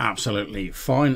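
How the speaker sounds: plain reading voice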